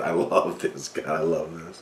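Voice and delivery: words broken up by laughter throughout. Reacting to a letter about delayed payments, laughing while talking. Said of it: "forgive me for laughing so much".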